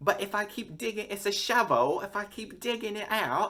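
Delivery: terrible put-on British accent, very high. Retelling a woman using a metal detector while everyone yells at her, terrible British accent. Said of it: "I'm about to do a terrible accent".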